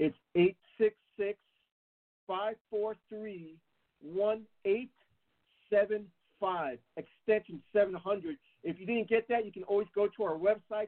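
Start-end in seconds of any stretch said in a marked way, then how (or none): 0.0-8.4 very slow, much slower than normal. Ad host repeating the phone number for listeners, very slow. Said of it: "I'm going to say it really slow".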